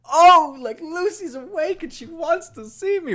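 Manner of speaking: thrilled voice, very high and very loud. Recapping his reaction to news that she woke up, imitating a very happy voice. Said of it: "His voice gets so happy".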